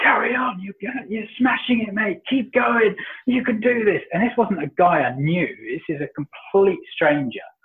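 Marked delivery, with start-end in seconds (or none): 0.0-4.0 very high, rallying, encouraging shout. Retelling how a stranger on a fence cheered on a struggling runner: imitating a stranger shouting encouragement. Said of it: "was just shouting at me".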